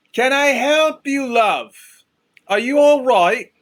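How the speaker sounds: very high, loud, carrying yell. A woman with hands out is coming straight at them; yelling out. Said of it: "I yell out".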